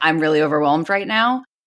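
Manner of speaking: ordinary delivery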